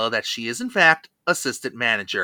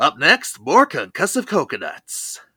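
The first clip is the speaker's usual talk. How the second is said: put-on radio countdown host announcer voice. Joking a phrase belongs on a countdown show, in a Casey Kasem voice. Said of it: "I should be saying it in a Casey Kasem voice".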